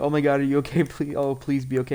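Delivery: put-on frantic, panicked pleading. Retelling the driver running up after the crash: imitating a panicking driver. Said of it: "he was just completely panicking".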